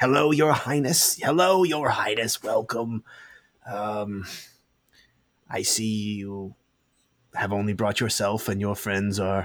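put-on storybook gnome character voice. Game master voicing a gnome walking toward the players, gnome voice. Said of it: "and he says".

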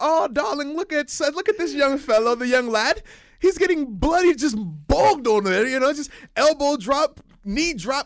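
posh, la-di-da upper-class voice. Imitating upscale spectators talking over tea about a streaker: imitating posh upscale spectators. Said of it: "with their tea and crumpets".

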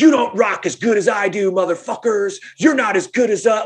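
put-on high, rowdy, drunken screaming. Retelling a drunk band member in the crowd: imitating someone screaming. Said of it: "he's screaming out stuff like".

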